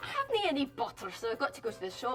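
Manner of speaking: broad Glaswegian accent with words clipped short. Showing how people from Glasgow speak, the speaker gives an example: thick Glasgow accent. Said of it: "that's like a super Scottish accent".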